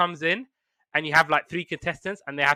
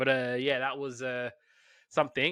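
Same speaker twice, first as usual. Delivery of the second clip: plain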